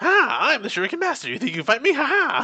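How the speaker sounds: put-on very high, squeaky, swooping kid voice. Mocking the English dub versus the Japanese one, high-pitched kid Ninjamon voice. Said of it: "really high pitched voice, like a little kid".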